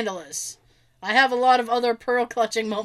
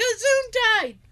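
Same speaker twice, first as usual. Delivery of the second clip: very high, hollered shout; 11 semitones higher than usual. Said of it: "My upstairs neighbor will actually shout".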